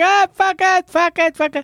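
very high, repeated screaming. Imitating team bosses screaming at race control: imitating someone screaming. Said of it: "they're all up there screaming at the race control".

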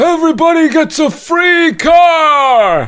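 very high, slow voice. Joking about redistributing toys, Bernie Sanders impression. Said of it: "Thanks, Bernie".

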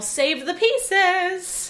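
put-on joking, loud shout in a Caribbean accent. Remembering a Jamaican woman's classroom catchphrase, imitating Miss Taylor's Caribbean accent. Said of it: "In the most beautiful Caribbean accent".

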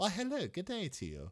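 overly polite, gracious, high, super cordial tone. Voicing a character while describing him, greeting someone super cordially. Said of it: "super cordial".

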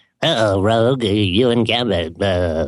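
low, very slow, creepy, drawn-out drawl. Imitating Professor X from the early nineties cartoon: creepy Professor X voice. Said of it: "He sounds super creepy".

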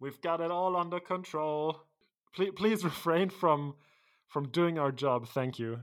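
high, loud, called-out voice. A woman below, dressed like Wolfgang's group, calls up to you: shouting from below. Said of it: "and she shouts to you".

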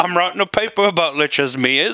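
put-on Cockney-Australian accent. A player voices a scholarly bartender character in a cockney australian accent. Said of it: "Like a fucking Cockney Australian".

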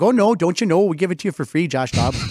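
put-on Minnesotan-accented speech. Speaker imitating minnesota locals talking to josh dobbs, in a minnesota accent. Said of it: "I've done Minnesota".

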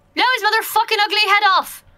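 high, in-character battle shout, war-cry style. Casting an inspiration spell as heckling, shouting at an ally: in-character shout. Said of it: "I'm gonna shout at Kenzie".

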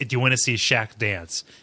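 plain

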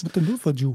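put-on male voice with foreign accent. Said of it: "It's literally just his foreign man voice".

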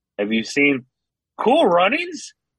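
happier, high-pitched, emphatic, lifted-up delivery.

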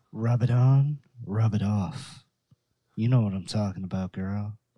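low, sultry, sexy radio-ad announcer voice. Improvising a mock men's deodorant ad, in a sexy radio guy voice. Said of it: "Sexy radio guy voice".

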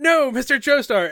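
loud, high, desperate crying out. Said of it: "Avdol and Joseph are like".

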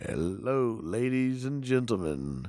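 deep baritone soul radio announcer voice. Imitating soul radio guys opening a show: baritone radio-guy voice. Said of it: "like the baritone, you know, radio guys".

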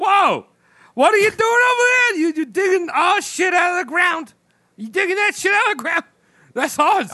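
put-on Turkish accent, very high-pitched. Telling a story, the speaker voices the Turkish government's reaction, in a Turkish accent. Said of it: "That's a good Turkish accent".

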